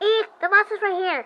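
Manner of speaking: high-pitched put-on nerdy character voice. Voicing a character in the game: nerdy voice. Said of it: "I'm gonna give him a nerdy voice".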